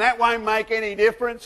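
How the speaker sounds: sarcastic delivery. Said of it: "she sarcastically said to him".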